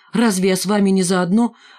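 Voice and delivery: plain reading voice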